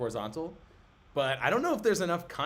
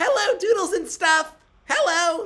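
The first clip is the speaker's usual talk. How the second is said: shrill, very high, loud squealing character voice; 12 dB louder than usual. Saying hi to a fan on request: Test Tube's voice. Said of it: "do Test Tube's voice".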